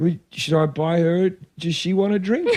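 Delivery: acted, baffled, confused, bemused, puzzled tone. Retelling a confrontation with a man at a gig, quoting their own reply, bemused. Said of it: "just bemused".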